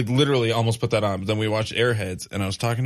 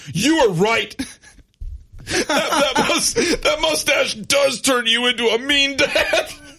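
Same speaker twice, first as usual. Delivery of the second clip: mock-angry voice-breaking preteen screech, higher, slower; 4 dB louder than usual. Retelling how a preteen stomped up the stairs, furious at the speaker: imitating angry screeching preteen. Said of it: "he was so mad at me".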